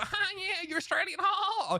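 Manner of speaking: high, mocking American gamer voice.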